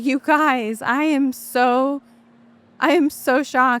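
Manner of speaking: slow, hard sobbing, bawling through the words. Retelling a second call from the tenant: imitating someone bawling. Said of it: "she was bawling".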